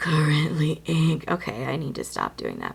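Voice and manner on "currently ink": creepy, eerie put-on voice. While writing something out, the speaker repeats a phrase in a creepy voice. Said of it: "I'm creeping myself out".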